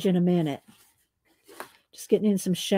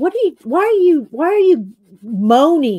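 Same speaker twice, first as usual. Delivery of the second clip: high-pitched, loud, puzzled-sounding voice. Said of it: "And Hupster would go".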